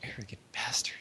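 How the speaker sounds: soft whispered mutter. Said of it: "you hear her mutter".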